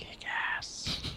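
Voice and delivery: hushed, barely voiced whisper under the breath. In a role-play game, a player's character answers, muttered under breath. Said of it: "Under my breath".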